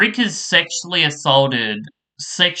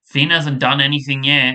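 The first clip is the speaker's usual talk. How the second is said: normal talking voice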